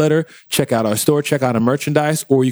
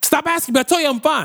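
very high, playful, joking shouting; 14 semitones higher than usual. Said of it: "You're yelling".

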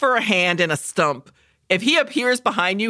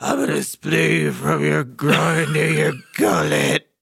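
low, menacing, movie-style whisper; 4 semitones lower than usual. Describing how the movie opens with the Candyman talking, low terrifying whisper. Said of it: "he talks in a low whisper that is terrifying".

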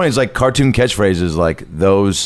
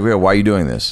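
plain

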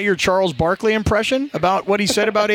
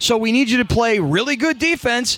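ordinary talk, nothing marked

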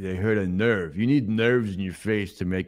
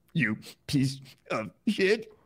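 sudden, high, furious angry snap; 7 semitones higher than usual. Asked whether they want to keep going, the speaker suddenly lashes out: angry outburst. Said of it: "I got emotional and angry".

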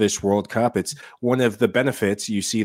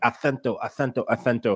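put-on Spanish accent and pronunciation. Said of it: "I have to practice my Spanish accent".

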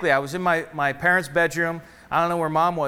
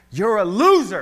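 put-on loud, screamed yelling; 3 semitones higher, 5 dB louder than usual. Recalling a man who looked him square in the eyes: retelling a scream. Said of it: "He screamed it right in my face".

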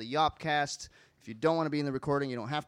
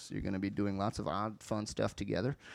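eerie, spooky delivery in a low, creepy voice; 5 semitones lower, 4 dB quieter than usual. Host introducing a class teacher to the audience, in a creepy voice. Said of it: "I was using my creepy voice".

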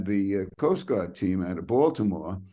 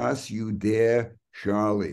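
put-on German-accented delivery. Retelling a character's famous weekly catchphrase: Baron Munchausen German accent. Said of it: "He had a German accent and he would say".

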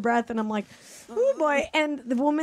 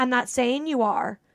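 imitated Southern accent. Retelling what a woman in line replied: imitating a southern accent. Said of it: "Southern accent".

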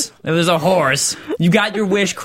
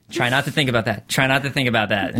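normal talking voice

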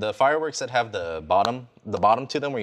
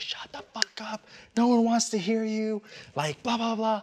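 mock, loud, all-out screaming and yelling outburst; 11 semitones higher than usual. Telling a story about shouting out the front door, retelling a scream. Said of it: "And I was just screaming".

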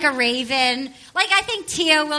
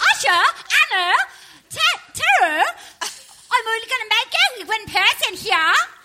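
fake, put-on, pitched-up Australian accent; 7 semitones higher than usual. Showing co-hosts how Australians on a dating show talk, in a put-on Australian accent. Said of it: "That's me as an Australian".

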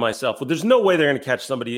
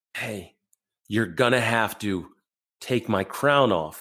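whisper, lower pitch; 3 semitones lower, 3 dB quieter than usual. Retelling what Brownie whispered while both were handcuffed: imitating Brownie whispering. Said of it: "Brownie turns to me and whispers".

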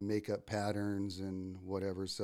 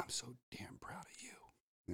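slow, hushed whisper close into ear; 4 semitones higher, 12 dB quieter than usual. Retelling what a fly-casting mentor whispered at a show: imitating Bill Blackstone whispering. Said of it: "he comes up to me and whispers in my ear".

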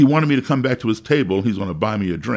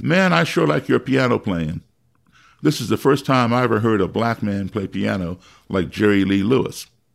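ordinary delivery

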